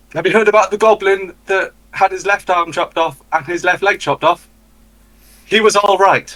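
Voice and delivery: high, hollered, shouted delivery. Running after a fleeing goblin in character, calling out a joke: shouting a joke. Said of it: "I'm going to shout".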